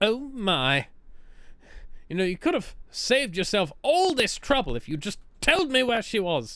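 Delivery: put-on British accent, high and swooping in pitch. Voicing a game character line aloud: british accent. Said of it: "why is [name] suddenly talking with a British accent?".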